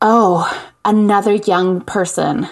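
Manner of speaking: put-on breathless voice. Retelling a phone call from an upset caller: imitating a breathless caller. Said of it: "this sort of breathless, middle-aged woman on the other end of the line goes".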